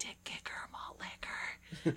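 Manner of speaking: slow, embarrassed, close whisper. Retelling how she leaned in among families, the speaker imitates her embarrassed lean-in. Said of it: "she gets all embarrassed and she leans in and she's like".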